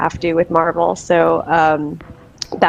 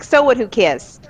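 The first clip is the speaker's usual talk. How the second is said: put-on Long Island accent, higher pitch; 5 semitones higher than usual. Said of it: "Why is it in a Long Island accent?".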